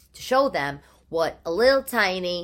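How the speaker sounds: plain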